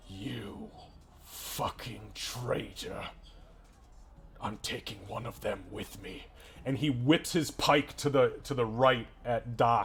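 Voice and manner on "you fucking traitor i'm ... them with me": hushed whisper through a clenched jaw. Game master voicing a character who looks down at another character, through gritted teeth. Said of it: "through gritted teeth".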